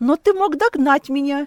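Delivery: reproachful, angry tone. She answers the narrator, who did not follow her to the airport, with anger in her voice. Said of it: "В ее голосе были злость".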